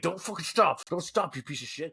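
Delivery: mock-angry yelling, acted. Recounting what a hookup yelled during sex: imitating an angry yell. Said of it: "she would yell at me during intercourse".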